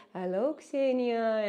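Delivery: put-on soft Indian English accent. Reading chat comments, imitating Indian speakers greeting her: soft Indian accent. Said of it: "When they talk in such a way".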